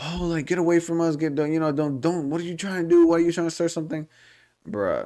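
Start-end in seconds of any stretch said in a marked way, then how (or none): 0.0-4.1 put-on high, confrontational screaming woman voice, screaming outburst. Retelling how a lady got between the group and started screaming. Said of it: "starts screaming like".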